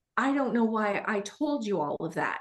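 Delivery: play-acted alarmed, rattled, panicked, caught-out tone. Retelling what someone blurted out in a panic: imitating panicked speech. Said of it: "he looks at me in this panic".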